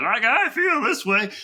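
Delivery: very high, loud, slow, drawn-out voice. Repeating how the listener sounded earlier, in a Muppet-like voice. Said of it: "you almost sounded like a Muppet".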